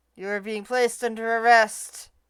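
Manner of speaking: flat, level, passionless monotone delivery. Placing a man under arrest, delivered in a flat monotone with no passion. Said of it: "you're kind of hearing this in somewhat of a monotone".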